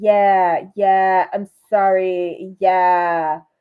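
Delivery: very slow, flat, deadpan robotic drone. Retelling how someone answered an apology scene: imitating Sierra's robotic tone. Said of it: "Sierra is just so robotic".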